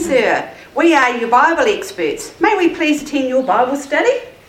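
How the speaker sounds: usual speaking voice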